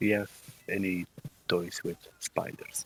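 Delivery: quiet, hushed, low voice. Asking a question once everybody is going outside: low voice. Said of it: "ask in a low voice".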